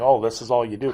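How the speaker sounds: plain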